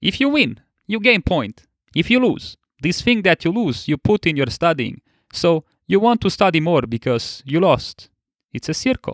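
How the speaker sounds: really bad, high, put-on Italian accent. Opening the session by quoting Pasquale, in a Pasquale impression with a bad Italian accent. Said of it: "my really really bad italian accent".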